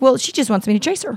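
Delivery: ordinary delivery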